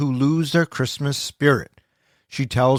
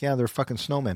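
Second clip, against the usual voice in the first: careless, dismissive, offhand delivery; 8 dB quieter than usual. Retelling how the parents answer a question about the snowman: imitating dismissive parents. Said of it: "the parents are very dismissive".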